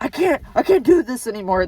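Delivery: mock, heated, loud, swooping, furious angry outburst. Retelling a companion refusing to roll up the car window: imitating someone angry. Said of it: "got really angry at me".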